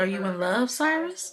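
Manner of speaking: plain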